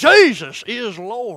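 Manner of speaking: put-on loud Fort Worth Texas accent. Speaker quotes how the Copelands end their show, with a Fort Worth accent like the Copelands. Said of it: "With that Fort Worth awesome accent".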